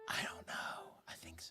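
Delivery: whispering voice. Answering a question about an absent friend: whispering. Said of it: "Why are we whispering?".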